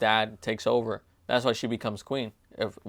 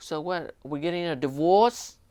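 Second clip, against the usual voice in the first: put-on pitched-up New York Bronx accent; 7 semitones higher than usual. Retelling what a wife asks her husband in a movie, Bronx accent. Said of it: "She has like a Bronx accent".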